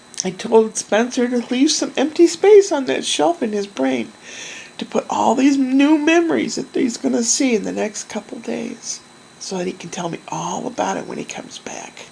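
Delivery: teary voice, speaking through crying. Speaker talking about the kids leaving on an adventure, crying. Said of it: "I'm sorry for crying".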